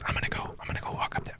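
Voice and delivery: very quiet, barely voiced whisper. Voicing a stealthy character telling the group: whispering. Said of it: "he kind of whispers".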